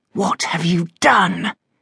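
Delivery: through clenched teeth. Narrating a story, a son questions his shouting father again, through clenched teeth. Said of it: "James repeated through clenched teeth".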